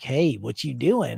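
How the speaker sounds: put-on creepy, creaky voice. Retelling playing a creepy villain who approaches a girl: imitating a creepy character. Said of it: "I was creepy".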